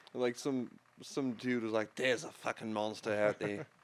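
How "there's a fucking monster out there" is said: put-on poor, off-target Scottish accent. Imitating an early writer warning of a monster: bad scottish accent. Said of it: "that's not even a Scottish accent".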